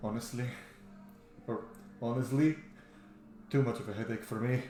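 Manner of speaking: said quietly, soft and understated. Voicing a character who shakes his head and turns away: quiet. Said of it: "he says it quiet".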